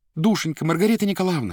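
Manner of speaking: high, imploring, begging, pleading tone. Natasha kneels before Margarita Nikolaevna and begs her, pleading. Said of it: "умоляюще заговорила Наташа и встала на колени".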